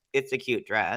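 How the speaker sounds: flat, expressionless delivery. Retelling a flat answer to a judge's question: imitating Lux's deadpan reply.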